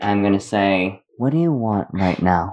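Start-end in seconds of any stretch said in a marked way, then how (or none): 1.2-2.5 brisk, fast, pointed delivery, close to the mic. Getting really close to him and asking in Primordial, speaking very quietly. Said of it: "just very, very quietly in primordial".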